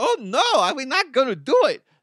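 very high-pitched, loud, squeaky voice.

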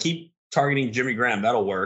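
ordinary delivery

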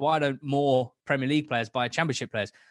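ordinary talk, nothing marked

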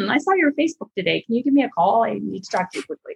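caring, concerned therapist-style tone. Recalling her texts after the speaker's Facebook posts, imitating Dr. Gail Parker. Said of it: "sounds like a therapist".

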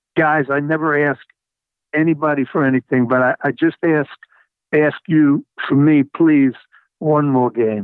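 plain

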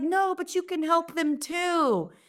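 put-on very high, slow, heavy Italian papa accent. Retelling a conversation with her father about her book: dad's thick Italian accent. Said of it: "my dad with his thick Italian accent".

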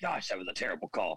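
mock muttering under breath. Describing what a coach says about a referee's call, imitating muttering under his breath. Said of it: "under his breath saying".

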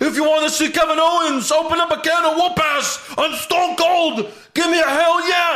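gravelly rasp pitched very high, not fully raspy. Retelling a wrestler's line delivered as Stone Cold: gravelly Stone Cold voice. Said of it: "he's kinda doing a grovelly voice".

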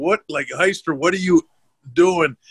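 scream fired off like a scolding. Retelling a man on a fishing trip turning to scream at the speaker, imitating someone screaming. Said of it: "he starts screaming at me".

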